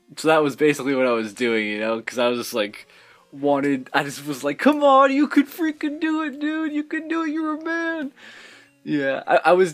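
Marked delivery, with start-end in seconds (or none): 4.6-8.1 mock eager, pumped-up cheering, pitched way up. Retelling cheering on his Pokemon during a hard fight: imitating himself pumping up his Pokemon. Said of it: "I just wanted to pump him up".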